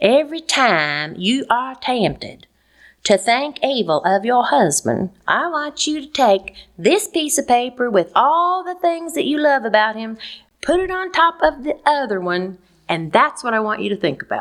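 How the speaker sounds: put-on Southern American Atlanta accent. Retelling a woman advising a bitter wife about her husband, in her Atlanta accent. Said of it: "in her Atlanta accent".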